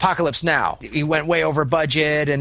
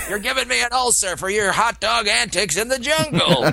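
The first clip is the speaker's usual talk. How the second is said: screaming 70s cop-show chief voice; 6 semitones higher than usual. Pitching a film idea, the speaker voices the studio chief screaming, like a 70s cop. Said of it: "will sound like a 70s cop".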